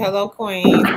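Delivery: ordinary delivery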